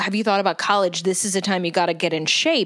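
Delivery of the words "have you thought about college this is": ordinary delivery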